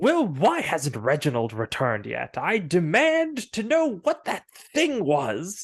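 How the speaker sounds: loud, swooping, snooty, lordly, haughty voice. Narrating the game, voicing a lord demanding answers from his servant, haughty voice. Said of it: "a very uh, haughty uh, voice is like".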